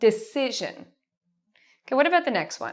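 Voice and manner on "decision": decision with si syllable louder and longer. Asking listeners which part of the word is stressed: stress on si in decision. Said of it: "If you said si, you are correct".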